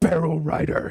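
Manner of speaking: high, snorting exclamation, snort through words. The narrator reads a character's reply: snorting. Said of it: "he snorted".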